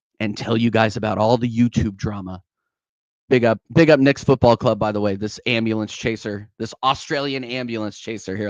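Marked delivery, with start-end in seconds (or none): 0.2-2.4 put-on, affected cool-guy voice. Announce that you will talk in your cool voice, then address the viewers in a put-on cool voice. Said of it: "Let me talk in my cool voice like this".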